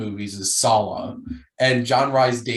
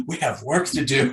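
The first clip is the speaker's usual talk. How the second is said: mock excited, eager, bursting with excitement; 2 semitones higher than usual. Retelling a film scene where the father gets excited: imitating an excited character. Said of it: "he gets so excited".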